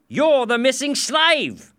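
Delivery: very high, loud, sudden exclamation. A policeman recognizes a missing slave in the street: exclaimed. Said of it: "he exclaimed".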